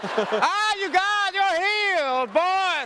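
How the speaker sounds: drawn-out, very high, slow televangelist preaching voice. Thanking someone after a stunt, playing a 700 Club preacher voice. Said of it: "I feel like a preacher on seven hundred Club now".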